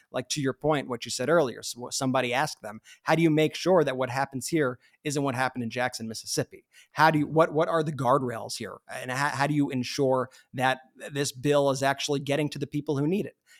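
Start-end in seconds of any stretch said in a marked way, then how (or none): none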